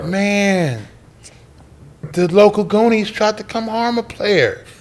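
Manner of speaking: quiet, easy, soft-spoken, drawn-out man's voice. Imitating Jones, a soft-spoken friend, retelling his words: imitating Jones, soft-spoken. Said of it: "He talked like this".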